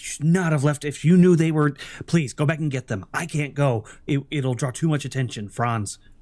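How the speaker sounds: very upset, distressed, urgent pleading tone. Voicing a character who urges a player to go back: very upset. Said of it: "she seems very upset now".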